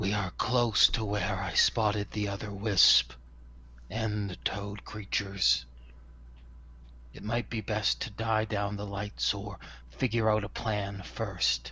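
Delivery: put-on, wispy character whisper. Pausing at a threshold, the player speaks as Pearson: Pearson's wispy whisper. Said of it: "in my wispy voice".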